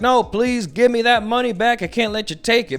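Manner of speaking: mock-crying, tearful, acted pirate voice. Recapping a story, voicing the robbed pirate, imitating a crying pirate. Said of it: "he's crying and he's like".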